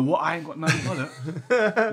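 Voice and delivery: normal talking voice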